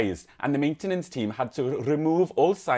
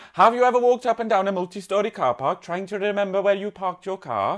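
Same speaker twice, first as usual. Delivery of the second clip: put-on Welsh accent, pitched up; 6 semitones higher, 3 dB louder than usual. Reading a news item from Wales Online aloud, in a Welsh accent. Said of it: "I'm going to have to read it in the accent".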